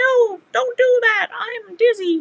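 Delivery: squeaky, very high, very drawn-out turtle voice. Voicing a turtle thread catcher complaining while being emptied: talking like a turtle. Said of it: "I can talk like a turtle".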